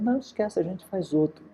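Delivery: light, tossed-off, high-pitched tone. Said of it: "ele falou".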